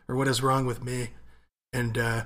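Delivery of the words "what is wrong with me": plain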